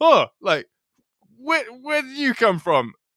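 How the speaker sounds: very high stand-up comedy voice. Retelling a comedian's stand-up bit: acting out a comedian's bit. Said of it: "acts this little bit out".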